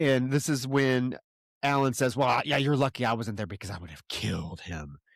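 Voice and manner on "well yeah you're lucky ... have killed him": put-on dark, menacing, low, fast, ominous voice. Retelling a man's remark about another man, mock-ominous. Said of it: "like very ominously".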